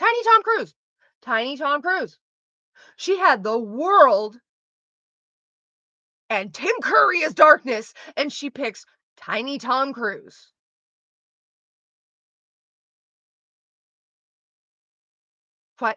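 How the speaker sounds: furious, fully worked-up, swooping, animated rant. Ranting about a film character's choice, angry and animated. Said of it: "I'm so mad".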